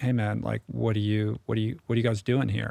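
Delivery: mock, put-on curious tone with an edge. Retelling how one of a group of guys questioned the newcomers, mock-curious with an edge. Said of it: "curiosity with a little bit of an edge".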